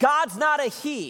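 very high, angry, slow yell. Retelling how someone in the audience interrupted the preacher: imitating an angry yell. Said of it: "And he yelled".

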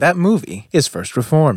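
newscaster announcing delivery. Asked to name his favorite movie, answering in a news anchor voice. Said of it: "I sound like a news anchor".

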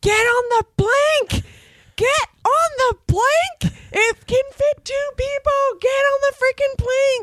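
mock six-year-old top-of-lungs screaming, very high pitch. Recounting screaming as a six-year-old in a theater, reenacting screaming at top of lungs. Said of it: "a little six-year-old screaming at the top of my lung".

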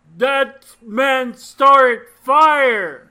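loud, accusing yell with the word fire drawn out. In character, accusing a man as a crowd tries to flee; yelling an accusation. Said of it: "I yell and point at him and say".

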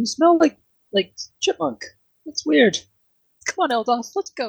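put-on high-pitched elf girl voice.

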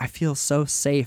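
ordinary talk, nothing marked

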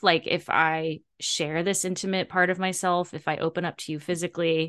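ordinary talk, nothing marked

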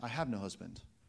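very low, pained, jaded and bitter. Retelling a woman's reply to Jesus, acting out a pained voice. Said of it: "You should hear the pain in her voice, or perhaps the jaded bitterness".

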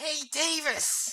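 high, strained, effortful monster voice. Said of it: "it's that strain".

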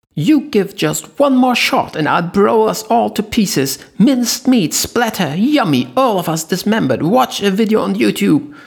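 shrill, high-pitched screaming. Linny threatens from the other side of the corridor with a grenade: shrill screaming Linny. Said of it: "Though petite, she was chubby and flashy and overweight, / she screamed on top of lungs from the other side of the long corridor. / came the shrill scream from the other side of the corridor, / scream".

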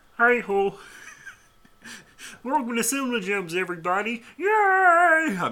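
yay stretched long at a very high pitch. Welcome everybody to Cinema Gems in a Kermit the Frog voice. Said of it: "I'm done with the Kermit the Frog voice".

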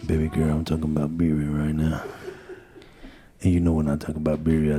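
low, soft, sexy seductive voice. Talking about birria to the others: low, sexy voice. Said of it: "real low and sexy".

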